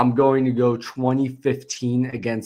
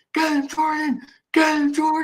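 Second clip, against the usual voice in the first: frantic, very high excited screaming. Retelling what he screamed at the TV during the play, retelling excited screaming at TV. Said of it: "I'm screaming".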